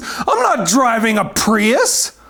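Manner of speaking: put-on emphatic, half-shouted, contained mild yell. Retelling how a man screamed back after hearing an offer, acting out a scream. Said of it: "screams at the top of his lungs".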